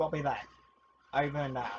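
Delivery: stern voice, sounding like over radio.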